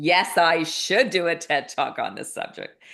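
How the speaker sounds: speaking through laughter, drawn out. Retelling a sister's TED Talk suggestion and answering: retelling a laughing reply. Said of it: "I started laughing like this".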